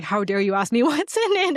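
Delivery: acted, high, stunned and taken-aback voice. Retelling a bar customer's reaction to a question: imitating a shocked customer. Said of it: "she looked at me shocked".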